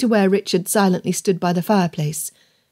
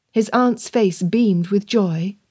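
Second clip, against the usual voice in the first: usual speaking voice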